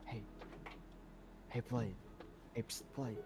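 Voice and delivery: soft, breathy whisper under the breath. Retelling how another person whispered to get the speaker's attention in a store aisle; whispering. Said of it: "he whispers like".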